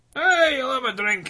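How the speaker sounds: put-on Scottish accent, very high-pitched. Joking about national stereotypes with friends, trying a scottish accent. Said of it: "That was more Scottish".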